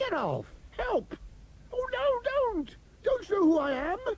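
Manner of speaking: frightened, broken, soft, high panicked cries. In a recorded take, a character has robots crawling all over him, panicked cry for help. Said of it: "There are robots crawling all over you".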